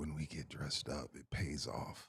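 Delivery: very soft, confiding, secretive whisper. Mid-conversation, choosing to say one line: whispered. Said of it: "let me whisper this".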